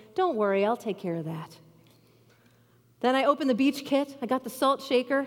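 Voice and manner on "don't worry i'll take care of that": mock very calm, steady, even and reasonable voice. Retelling reassuring a kid who needed them, retelling a calm, reasonable voice. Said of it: "in this very calm and reasonable voice".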